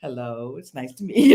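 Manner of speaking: put-on deep corporate voice. Showing how she greets a new acquaintance, in her corporate voice. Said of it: "I put on my corporate voice".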